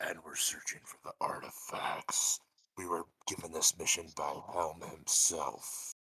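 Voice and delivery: soft, hushed whisper. In a role-play scene, the speaker whispers to another character: whispering. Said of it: "I'm gonna whisper to her".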